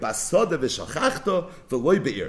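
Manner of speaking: normal talking voice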